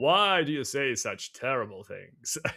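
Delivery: each word drawn out slowly. Recounting hanging out with a friend last night, using the King of Hybern voice. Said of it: "I used that voice for like ten minutes".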